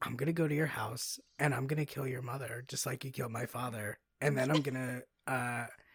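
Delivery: play-acted, perfectly calm, composed, menacing tone. Quoting a movie character's threat, imitating a calm delivery. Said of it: "she says it so calm".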